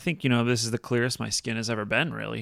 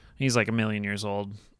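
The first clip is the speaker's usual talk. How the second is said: ordinary talk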